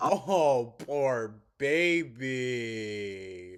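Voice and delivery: loud taunting mock pity, with "baby" stretched out. Reacting to a recording of someone's complaint: mocking tone. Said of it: "I'm mocking Amber".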